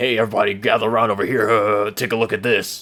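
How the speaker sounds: boastful, bragging show-off tone. Retelling how a classmate in gym class showed off what he brought: imitating a kid showing off. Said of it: "showcasing it off like".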